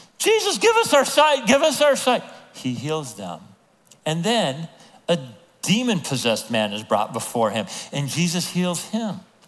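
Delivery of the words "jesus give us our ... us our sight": shrill, very high, loud screaming. Retelling two blind men calling to Jesus: imitating men screaming. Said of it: "Two blind men start screaming at him".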